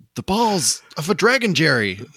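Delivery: high-pitched, animated delivery with swooping pitch. Joking about Yamcha going through Goku's fridge for Dragon Balls, Kramer impression. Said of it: "That's my best Kramer impression".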